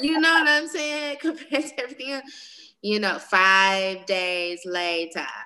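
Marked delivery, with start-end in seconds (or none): 3.2-5.3 cartoon show narrator announcer voice. Talking about cooking the turkey for days, in SpongeBob voice. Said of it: "in my SpongeBob voice".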